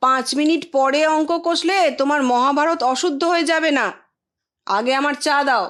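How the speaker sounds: shouting. Reading a story where an uncle orders tea while marking: shouting. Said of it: "Suvendu চেঁচালো".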